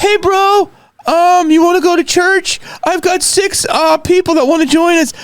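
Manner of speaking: very high-pitched, friendly voice. Recalling what a friend asked mid-pandemic, the speaker does a Jay impression. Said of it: "I'll work on my Jay".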